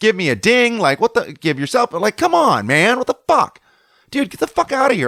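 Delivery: mock very high, rising, furious angry rant. Retelling what he told a surfer who cut him off: retelling own angry words. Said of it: "I'm mad".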